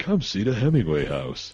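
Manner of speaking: fabulous, swooping holiday commercial voiceover narration. Joking with a co-host who says you sound like a vacation ad: vacation ad voiceover. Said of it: "I feel like you're doing a voiceover for like a, a fabulous vacation".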